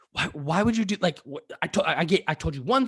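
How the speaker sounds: put-on, upset, high, exasperated outburst. Retelling finding Splenda in their coffee; retelling freaking out. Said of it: "and I freak out".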